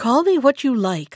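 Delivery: with impatience. The king answers the scornful fairy, asking what she wants, impatiently. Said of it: "I said impatiently".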